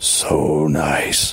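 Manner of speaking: wet, sodden, gurgling voice, as through rotted seaweed. Reading a story, voicing the unseen speaker in the closet: voice through rotted seaweed. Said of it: "as if they might have come through a mouthful of rotted seaweed".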